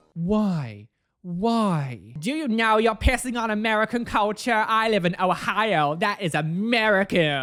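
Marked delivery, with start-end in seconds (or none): 2.2-7.5 horrendous put-on American accent, drawn out. Reading out an upset commenter's words in a horrendous American accent. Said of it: "I'm sorry for my horrendous accent".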